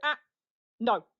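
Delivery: quick, curt, sharp voice. Speaker showing how she corrects her dog when it cuts in front, short and sharp. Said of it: "quite short and sharp".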